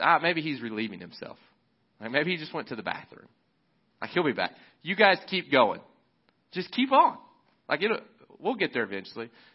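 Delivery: put-on, needling, swooping, taunting tone. Retelling a prophet mocking rival prophets all morning: imitating Elijah taunting. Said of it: "He begins talking smack to him".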